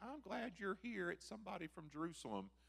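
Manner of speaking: put-on loud southern Alabama accent, pitched high. Retelling what Mom said on the front porch, phone in hand, in a southern Alabama accent. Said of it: "she says in her southern Alabama accent".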